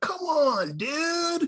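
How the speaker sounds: surfer-dude slang voice, pitched very high. Joking about how a player said a phrase: Ninja Turtle surfer voice. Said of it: "like a surfer, like the Ninja Turtle".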